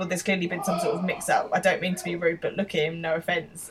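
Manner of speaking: normal talking voice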